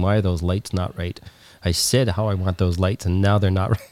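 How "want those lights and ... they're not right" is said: normal talking voice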